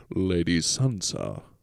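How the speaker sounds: menacing, deep voice. Talking about Game of Thrones, quoting one character: Roose Bolton impression. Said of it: "Roose is the one who goes".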